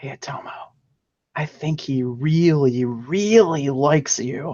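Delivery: whispering voice. In a roleplay, the speaker smiles and says something to Atomo, whispering. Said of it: "whispering to you again".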